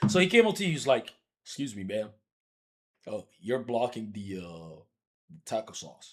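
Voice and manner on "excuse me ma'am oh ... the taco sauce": hushed, very soft, courteous, soft-spoken murmur. Acting out how the man she met first spoke: imitating a soft-spoken polite man. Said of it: "He's very soft-spoken".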